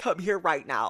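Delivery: mock tearful sobbing, pleading. Retelling how a mother reacted when her kid went missing, imitating a mother sobbing. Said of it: "she's sobbing".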